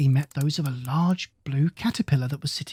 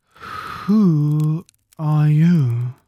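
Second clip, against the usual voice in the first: drowsy, lazy, languid, sleepy voice; 5 dB louder than usual. Narrator reads the Caterpillar addressing Alice, languid, sleepy voice. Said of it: "addressed Alice in a languid, sleepy voice".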